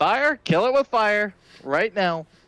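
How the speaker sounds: very high, shrill shout in a character voice. Playing a character who yells for the others to burn a monster: yelling in character. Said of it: "and I'm gonna just yell".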